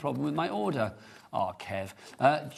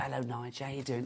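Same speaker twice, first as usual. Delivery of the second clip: put-on Cockney accent, lower and quieter; 3 semitones lower, 7 dB quieter than usual. Imitating a friendly receptionist greeting, in a put-on cockney accent. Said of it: "She doesn't talk like a Cockney".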